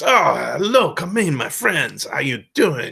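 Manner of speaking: vague, drifting put-on Mediterranean accent. Speaker showing the accent he gave a character, in a vague Mediterranean accent. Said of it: "kind of Mediterranean".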